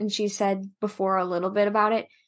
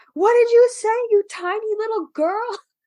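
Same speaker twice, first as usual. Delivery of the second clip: mock shrill screaming, very high and loud; 13 semitones higher, 5 dB louder than usual. Recounting a funny manga moment, voicing Ed's reply to May: Ed screaming back. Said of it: "And Ed screams back".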